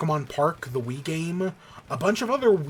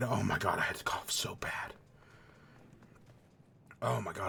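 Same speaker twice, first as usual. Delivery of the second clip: crying from coughing, lower and quieter; 9 semitones lower, 11 dB quieter than usual. Recovering from a choking cough fit, teary after a coughing fit. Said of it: "I'm legitimately crying right now".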